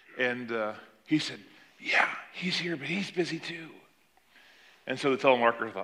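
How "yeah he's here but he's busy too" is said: put-on soft, small little boy voice. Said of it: "the little boy's voice was very soft over the phone".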